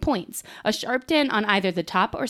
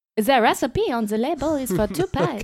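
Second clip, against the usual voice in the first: put-on French accent; 4 semitones higher than usual. Reading a one-star review aloud after being asked: put-on French accent. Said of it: "now you gotta read it in a French accent".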